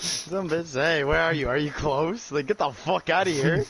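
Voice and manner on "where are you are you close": imitated creepy voice. Retelling what a caller said: imitating a creepy voice. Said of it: "in, like, a creepy ass voice too".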